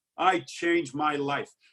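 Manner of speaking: frog-throat Brooklyn accent. Repeating the other speaker's line back to them, frog-throat brooklyn accent. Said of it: "almost like frog throat".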